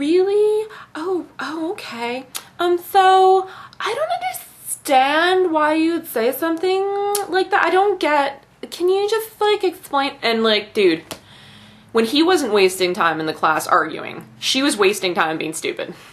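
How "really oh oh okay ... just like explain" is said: put-on very high, baffled, dim-witted know-nothing girl voice. Retelling an irritating classmate from a class: mocking impression of a classmate. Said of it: "she talked like this".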